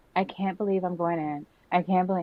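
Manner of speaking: dead-level, flat, droning monotone voice. Speaker imitates how she talks in every confessional, imitating her monotone delivery. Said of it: "she's just like very monotone".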